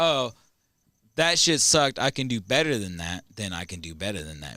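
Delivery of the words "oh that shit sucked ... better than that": plain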